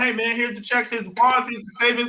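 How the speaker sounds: normal talking voice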